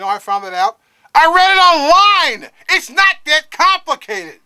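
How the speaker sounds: shrill, loud, high-pitched, exasperated, worked-up rant. Complaining about easy-to-find news, upset and worked up. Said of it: "Calm down".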